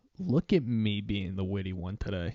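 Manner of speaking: smug, cheeky, would-be witty voice. Mocking people who point out storms, imitating a cheeky tone. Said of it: "they say it with such a cheeky tone in their voice".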